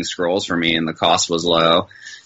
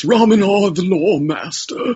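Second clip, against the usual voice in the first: put-on old man character voice, much higher; 13 semitones higher than usual. Asked for a sample of the character's voice, doing Ramanar the Lore Master voice. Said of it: "Can we get a sample of that voice?".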